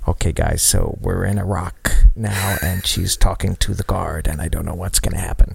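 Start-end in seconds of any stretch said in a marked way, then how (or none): 0.1-1.9 mumbled aside on the mic. Retelling how a man on mic had to address the guys, muttering quietly. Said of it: "he has to mutter a thing about".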